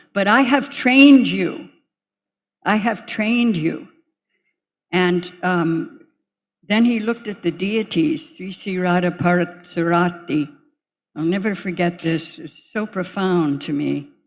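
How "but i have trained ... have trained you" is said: play-acted very strong, firm, loud, forceful voice. Retelling a reply to someone defending herself: imitating a very strong voice. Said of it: "he said in a very strong voice".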